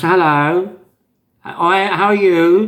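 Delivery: very posh voice, high and very slowly drawn out. Imitating an old acquaintance's way of talking: imitating a posh voice. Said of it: "Very, very posh, very posh".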